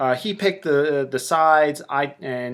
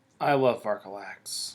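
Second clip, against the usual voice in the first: as sarcastic as possible, low and heavy; 5 semitones lower, 7 dB quieter than usual. Reacting to the opponent's listed units: as sarcastically as humanly possible. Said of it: "I say that as sarcastically as humanly possible".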